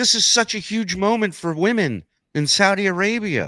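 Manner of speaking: very slow, high, weepy, sobbing speech. Retelling what people said while sitting there crying: imitating someone crying. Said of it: "And they're sitting there crying".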